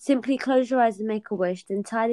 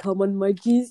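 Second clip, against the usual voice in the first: put-on Indian accent, slower pace; 3 dB louder than usual. Retelling G-Man outside the house with a metal baseball bat, G-Man's Indian accent. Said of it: "in an Indian accent".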